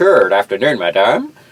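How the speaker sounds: laid-on, fake Jamaican accent. Retelling how someone greeted a woman to lighten the mood, put-on jamaican accent. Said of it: "he puts on a Jamaican accent".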